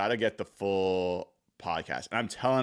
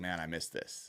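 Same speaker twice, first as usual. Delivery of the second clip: almost whispered mutter under the breath; 5 semitones lower, 11 dB quieter than usual. Describing a player's reaction while a coach talks, retelling a muttered aside. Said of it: "say something like under his breath".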